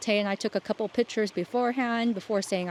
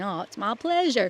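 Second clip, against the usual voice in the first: put-on rural country accent. Retelling the pastor's reply before the baptism, imitating Pastor Joel's country accent. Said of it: "his country accent".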